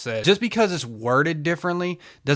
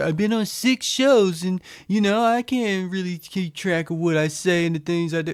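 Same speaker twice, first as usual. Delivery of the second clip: play-acted whining, self-pitying, complaining tone; 6 semitones higher than usual. Quoting another guest mockingly during an argument: mocking imitation of complaining. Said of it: "bitch about going on these shows".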